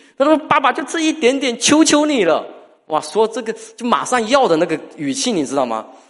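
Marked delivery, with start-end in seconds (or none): 0.2-2.5 put-on very high, wheedling, sweet-talking little kid voice. A father acts out his second child pleading with him: imitating a child sweet-talking. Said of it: "嘴巴特别甜".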